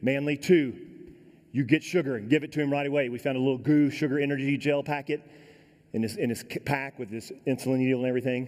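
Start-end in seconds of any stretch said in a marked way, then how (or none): none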